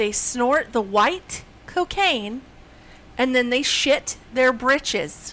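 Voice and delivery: very slow, deliberate, each word drawn out. Repeating an explanation to a listener who misunderstood, speaking very slowly. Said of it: "I'm going to speak it real slow this time".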